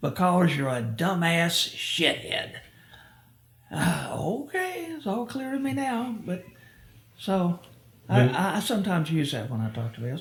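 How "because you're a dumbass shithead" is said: rough, heavy, burly, gruff army-sergeant voice. Retelling what his sergeant answered about the nickname Dash, imitating a burly, gruff voice. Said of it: "in his burly, gruffly voice".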